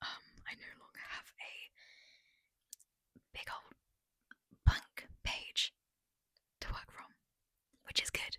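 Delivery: whispering. A vlogger giving a late update to viewers, whispering. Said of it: "so I'm gonna whisper".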